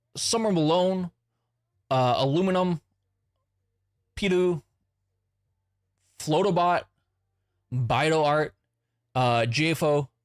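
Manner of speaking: very slow, careful, unhurried reading. Reading out a list of names, reading them very slowly. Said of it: "I'm reading these very slowly".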